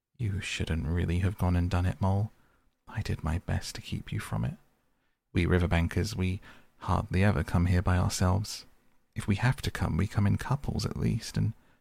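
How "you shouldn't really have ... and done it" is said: usual speaking voice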